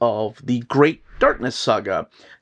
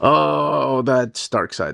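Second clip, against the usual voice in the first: usual speaking voice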